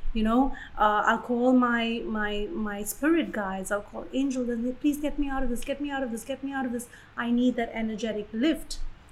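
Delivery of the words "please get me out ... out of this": mock begging, much faster pace. Describing calling on angels for help, acting out begging. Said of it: "I'll literally be begging".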